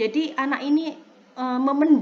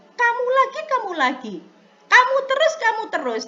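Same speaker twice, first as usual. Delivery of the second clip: mock harsh scolding tone in a very high voice; 10 semitones higher, 4 dB louder than usual. Speaker acts out a punishing teacher's scolding: mock harsh scolding. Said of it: "berkatanya dengan nada tinggi".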